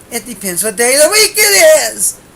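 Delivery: loud, belted, wide-ranging, joking outburst.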